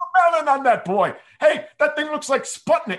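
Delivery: very high, loud scream. Retelling a movie scene where the father yells at the boy: imitating the screaming So I Married an Axe Murderer father. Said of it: "he's screaming at him".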